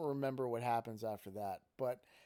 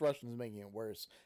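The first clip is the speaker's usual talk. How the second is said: normal talking voice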